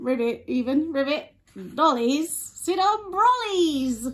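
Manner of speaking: silly, put-on cartoon frog voice. Reading a story aloud, voicing the frog: frog voice. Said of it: "the eighth different frog voice you've done".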